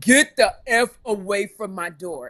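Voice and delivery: play-acted, loud screaming in deepest voice. Retelling yelling through the door at a man kicking it, retelling a deep-voiced scream. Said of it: "I screamed in the deepest voice I had".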